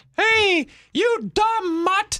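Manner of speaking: squeaky cartoon voice, way up high. Friends trying Mickey voices, one quoting Mickey yelling at Pluto, Mickey Mouse voice. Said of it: "We can't just keep doing Mickey voices".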